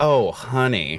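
put-on sassy tone. Reacting to Kate in the conversation: put-on sassy "Oh, honey".

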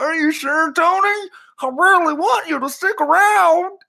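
loud, very high put-on voice. Retelling Jerry's reply to a retiring player, Jerry Jones impression. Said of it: "That was my Jerry Jones impression".

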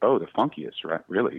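put-on condescending, patronizing disbelief. Retelling a friend's reaction to a record: imitating a condescending tone. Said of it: "seemingly very condescending goes".

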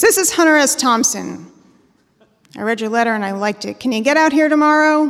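loud, mumbled voice with phone-like sound. Retelling a late-night phone call: Hunter S. Thompson mumbly baritone. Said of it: "this mumbly baritone on the other end".

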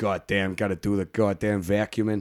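slow, drawn-out put-on New York accent. Speaker showing the accent he uses wandering his flat vacuuming, new york accent. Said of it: "I just wander around doing that accent".

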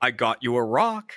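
put-on unhurried, calm old man voice. Retelling his own line from a filmed scene as the old man: calm old man character voice. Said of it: "I just calmly say".

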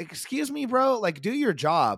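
high, indignant, rebuking tone.

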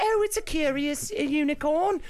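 put-on grown man's very high, slow little-boy voice. Describing a man pretending to be a little boy, in a little boy voice. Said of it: "But he's talking like this".

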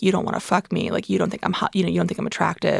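put-on anger, super mad, furious. Retelling what she said on the phone after getting mad, imitating someone super mad. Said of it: "She got super mad at me and was like".

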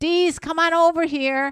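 mock calling out, loud and high-pitched. Speaker retells calling him over from across the restaurant, retelling a shout. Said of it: "And I'm shouting".

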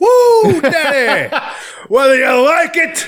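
very high, very slow, stretched-out "woo". Doing a wrestler's catchphrase for the other speaker: Ric Flair voice. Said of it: "do Flair's voice".

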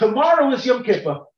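high, loud calling yell.

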